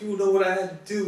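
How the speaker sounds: high, furious-sounding yelling dad voice. Retelling how a father yelled at his son in a parking lot: imitating a dad yelling. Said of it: "the dad's yelling at the kids".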